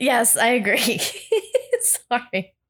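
slow delivery, stifling laughter while holding it back. Answering another speaker's teasing remark while trying not to laugh. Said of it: "I'm trying not to trying not to laugh".

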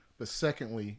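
ordinary talk, nothing marked

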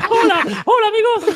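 squeaked out, way up high. Greeting the others as a listener calls out who it is: Mickey Mouse voice. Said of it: "es Mickey, justamente".

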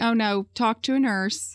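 ordinary delivery

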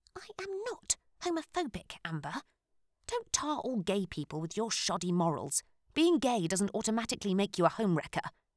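pissed-off, angry, furious whisper. Narrator reads a woman at a bar continuing after shouting: pissed-off whisper. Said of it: "Lowering her voice to a pissed-off whisper".

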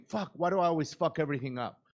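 plain

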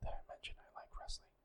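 very quiet, hushed whisper. Repeating a side remark about liking wrestling: whispering. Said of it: "I'll stop whispering now".

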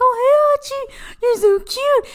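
put-on very high, gushy baby-talk voice. Recounting patting hachi on the head, speaker makes the baby voice. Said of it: "I was making the baby voice".

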